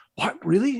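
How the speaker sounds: mock, very high, thrilled, excited disbelief. Retelling someone's reaction to hearing about a short film: imitating excited surprise. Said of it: "Villeneuve got so excited".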